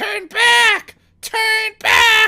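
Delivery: screaming skeleton voices. Voicing skeletons warning the players away: skeletons screaming.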